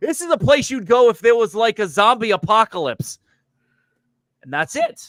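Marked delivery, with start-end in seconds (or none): 0.0-3.2 thick put-on Boston accent, pitched very high. Retelling what a man said on arriving at the place, in a thick put-on boston accent. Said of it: "in like the most Bostonian accent he could muster".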